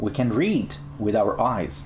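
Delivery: ordinary talk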